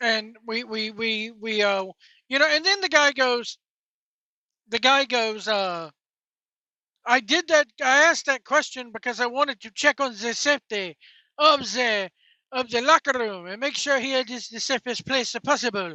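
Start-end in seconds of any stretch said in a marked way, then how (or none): 7.1-16.0 put-on French accent throughout the speech. Retelling what the guy said in reply, in a put-on french accent. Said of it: "How do you like my French accent?".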